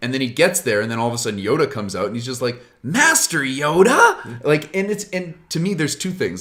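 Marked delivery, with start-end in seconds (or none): 2.8-4.4 drawn-out calling word with questioning rising tone. Retelling a film scene where a character meets his old teacher: Luke Skywalker impression. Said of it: "That was a pretty good impression".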